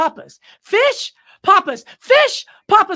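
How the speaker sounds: very high, very loud, shrill, insistent escalating repetition. Retelling a guy at a buffet repeating words at a man, imitating someone getting louder. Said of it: "Like he just keeps getting louder".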